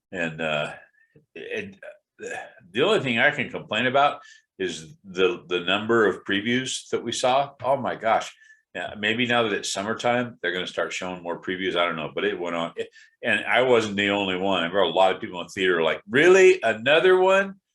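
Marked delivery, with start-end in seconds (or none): 16.1-17.4 high, loud, exasperated groaning delivery. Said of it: "it was a vocal audience".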